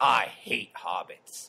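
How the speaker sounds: low, slow, dead-serious delivery. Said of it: "just dead serious".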